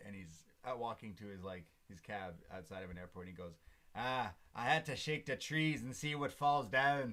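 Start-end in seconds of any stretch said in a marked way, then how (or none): 4.0-7.1 very loud, high, clumsy, put-on bad Irish accent. Retelling what a man said walking to his cab, in a bad Irish accent. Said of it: "that was not a good Irish accent".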